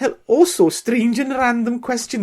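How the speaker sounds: sudden Welsh accent, very high and loud. Reading out a listener's question: accidental welsh accent. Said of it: "That's Welsh".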